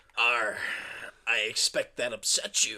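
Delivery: deep, low pirate voice. Reading through a skit as the pirate Derek: Derek pirate voice. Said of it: "He's a pirate".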